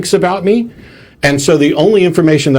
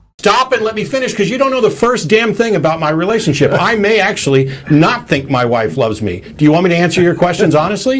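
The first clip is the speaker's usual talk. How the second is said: angry, irritated, heated tone; 4 semitones higher than usual. Telling the questioner to stop interrupting and let him finish, angry. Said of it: "don't get angry, man".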